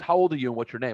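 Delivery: normal talking voice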